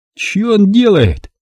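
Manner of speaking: very high, astonished, amazed outburst. The platoon commander watches a man press his lips to a wounded soldier's shoulder, astonished. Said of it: "изумился взводный".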